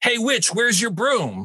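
high-pitched, jeering holler. Retelling how a random man yelled at the listener, retelling a man's yell. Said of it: "some random man yelled at you".

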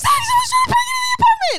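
shrill, high, loud panicked scream. Retelling a phone call while someone tried to break into the apartment, retelling own scream. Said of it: "I'm like screaming on the phone going".

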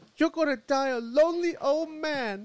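very high, fake, put-on Chinese accent. Speaker quoting what his date said to him at dinner, Chinese accent impression. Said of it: "You did that accent really well".

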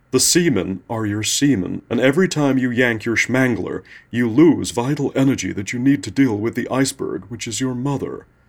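put-on bogus American accent, slow drawl. Imitating him giving you an in-depth analysis: bogus american accent drawl. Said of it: "he will drawl in his bogus American accent".

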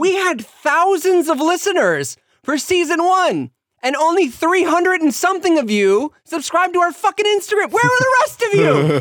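very high-pitched, berating, scolding rant. Podcast host addressing the listeners while they wait, high-pitched voice. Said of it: "Ian's voice can only get so high pitched".

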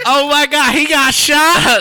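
very high, very slow, drawn-out alarmed wail. Retelling a dream where a woman runs up: imitating a woman's panicked cry. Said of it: "You did that perfectly".

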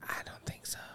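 very quiet, hushed, breathy whisper. Answering whether you would go to school again, whispering. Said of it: "You don't gotta whisper that shit".

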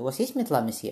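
ordinary delivery

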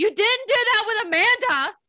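screamed outburst. Retelling screaming at the TV last night: imitating own screaming. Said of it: "screaming at my T V last night".

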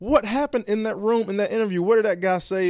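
high, loud stunned wondering. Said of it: "in my head, I was like".

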